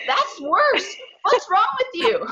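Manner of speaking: play-acted, very high-pitched, complaining yell. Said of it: "and then her saying".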